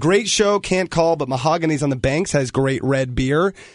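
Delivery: plain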